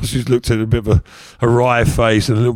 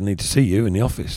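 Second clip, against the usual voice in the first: plain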